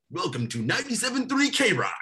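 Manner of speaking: high, put-on radio announcer voice. Pitching a recurring bit for the show: put-on radio announcer voice. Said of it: "do like my radio voice".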